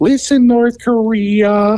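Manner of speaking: put-on very high baby voice, "Korea" drawn out. Imagining Adam Sandler as president, Adam Sandler baby voice. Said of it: "in that baby voice going".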